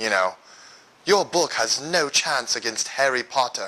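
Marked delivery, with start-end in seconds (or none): 1.0-3.7 put-on mixed English and Irish accent. Speaker acts out little Harry Potter taunting him, Harry Potter English-Irish accent. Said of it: "with his English Irish accent".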